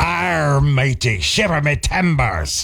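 put-on old sea-dog pirate voice. A country radio host marks National Talk Like a Pirate Day, pirate voice. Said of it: "National Talk Like a Pirate Day".

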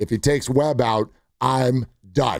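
plain

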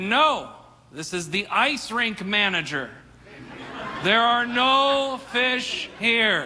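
put-on slow, grand, godlike voice from above. Telling a joke, voicing the ice rink manager answering them in a big booming voice. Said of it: "that big booming voice again".

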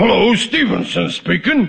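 disguised put-on voice, stuffed-up sounding. Showing how he will fake a phone call: imitating Stevenson's voice. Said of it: "I imitate his voice".

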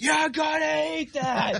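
very high, drawn-out, rough scream. Retelling how the mother answered the boy again: imitating a mom screaming. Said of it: "She matched the energy".

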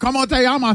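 Spanish spoken with a Japanese accent. Acting out how family would greet them over FaceTime: Spanish in an Osaka-like accent. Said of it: "Why do you say it like you're from Osaka?".

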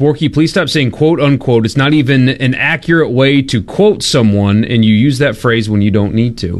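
ordinary talk

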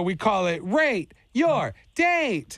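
words "Rate Your Date" drawn out long.

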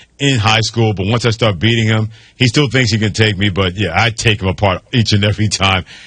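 ordinary talk

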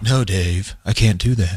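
deliberate, low, slow movie-line voice. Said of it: "that was a good imitation".

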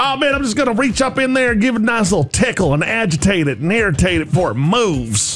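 put-on Southern accent drawl. Imagining how someone tickling a snake should sound: southern drawl. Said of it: "a little bit more of a southern drawl".

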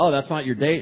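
usual speaking voice

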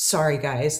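mock-shy, quiet mutter under the breath. Retelling how he told the guys sorry, quietly and shyly under his breath. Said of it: "kind of quietly under his breath looks at the guys shyly".

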